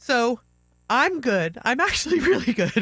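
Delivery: high, loud, near hysterics. Opening up on the show about her life, sounding near hysterics. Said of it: "I know it sounds like I'm in hysterics".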